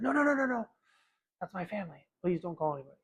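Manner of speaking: put-on acted super-defensive girl voice. Retelling how a girl answered an offer to call someone, imitating a defensive girl. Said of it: "she got like super defensive".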